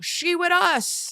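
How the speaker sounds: mock, very high child's scream. Retelling how a son screamed during a game: imitating Goose screaming. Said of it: "he screamed out".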